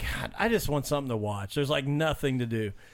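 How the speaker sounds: plain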